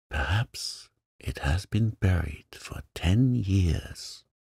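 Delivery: soft, hushed, half-whispered murmur. Reading aloud as the child holds an old buried key: half-whispering. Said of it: "she said in a whisper".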